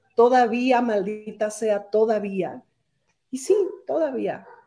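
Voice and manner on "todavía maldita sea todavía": ordinary delivery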